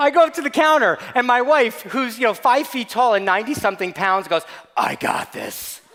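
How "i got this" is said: put-on deep voice, low and hushed, near whisper. Husband retells his wife stepping up to the store counter, in a mock deep voice. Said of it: "it's the deep voice".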